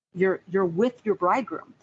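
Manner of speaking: ordinary talk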